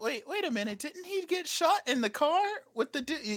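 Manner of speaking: put-on soft, high-pitched, confused old-woman voice.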